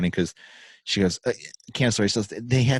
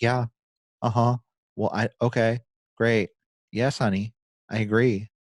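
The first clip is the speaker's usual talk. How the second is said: flat, bored, disengaged monotone. Imitating a wife answering her husband: imitating a monotone reply. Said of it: "very, uh, monotone of her".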